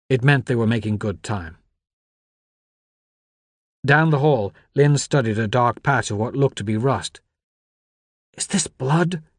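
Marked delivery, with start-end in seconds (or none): 8.3-9.2 high, hissed through the teeth. Reading a story, the narrator voices Lynn in the hall: hissed. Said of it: "she hissed".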